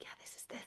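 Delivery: very soft whisper, under the breath. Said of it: "whisper to each other".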